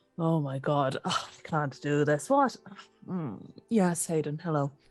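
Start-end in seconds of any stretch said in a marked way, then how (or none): 0.2-2.3 slumped, deflated, defeated and despairing tone. Voicing a character who slumps after seeing the prisoner: slumped, defeated. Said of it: "he just sort of slumps and goes".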